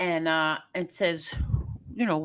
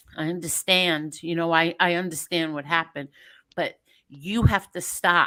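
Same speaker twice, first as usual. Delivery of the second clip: normal talking voice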